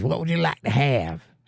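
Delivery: thick, totally fake, strong Southern drawl. Retelling a woman taking their order at a table: totally put-on Southern accent. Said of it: "real strong, totally put on Southern accent".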